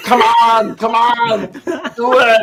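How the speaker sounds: slow, drawn-out, steady, defiant delivery. Screaming at an enemy to attack: Schwarzenegger in Predator screaming. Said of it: "I'm like Schwarzenegger in Predator".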